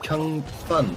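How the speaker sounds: Kung Fun said flatly, falling tune like a fact.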